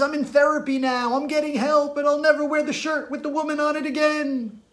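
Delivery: acted, very high, groveling, begging, pleading tone. Acting out a man's final apology: imitating someone begging. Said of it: "he begs and says".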